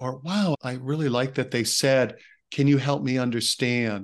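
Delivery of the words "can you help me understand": gentle, soft tone of voice. Giving an example of a kind remark, quoting someone in a gentle tone. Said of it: "in a gentle tone of voice".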